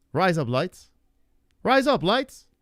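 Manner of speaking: Australian accent. Asked for thoughts on a phrase, a speaker tries it in an aussie accent. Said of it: "it sounds like an Aussie accent saying razor blades".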